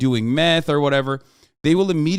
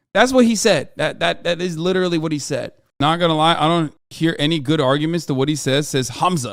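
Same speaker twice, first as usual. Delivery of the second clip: ordinary delivery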